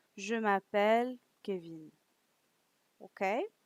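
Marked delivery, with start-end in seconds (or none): 0.2-1.9 voice falls in pitch at end on Kevin. French lesson, answering with one's name: falling pitch at end on kevin. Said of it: "For an answer, you go down".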